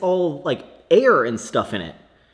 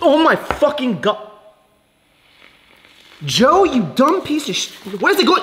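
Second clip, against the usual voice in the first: shrill, very high-pitched, enraged furious outburst; 10 semitones higher, 4 dB louder than usual. Speaker testing a device that sprays everywhere, angry outburst. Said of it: "I'm so angry right now".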